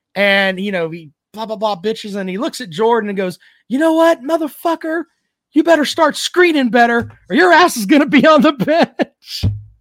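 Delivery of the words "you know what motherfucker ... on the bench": very high, furious ranting yell. Retelling a locker room scene where he turns on Jordan, imitating Bobby Knight yelling. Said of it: "he's yelling at everybody".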